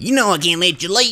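very high, sinister, villainous cook character voice. Playing a game as the cook and getting into character, in character as the cook. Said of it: "might as well get into character".

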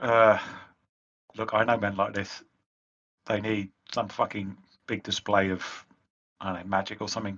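soft, close, leaning-in half-whisper. A player character leans over to Silk to speak privately, half-whispering. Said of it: "I'll lean over and just whisper".

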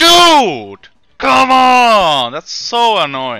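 yelling in frustration. Player reacts to a mistake mid-match: yelling in frustration. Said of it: "Sorry for yelling".

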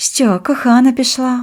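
high, sly, snide, mocking, teasing tone. A young stranger questions the narrator, asking with a snide smile. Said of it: "з єхидною усмішкою запитала дівчина".

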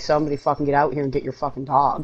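usual speaking voice

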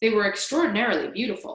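plain

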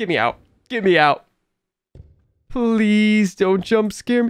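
scared, afraid voice. Player in a horror game, the door just closed behind them, scared. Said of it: "I'm so scared right now".

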